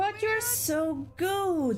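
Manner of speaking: slow pleading character voice.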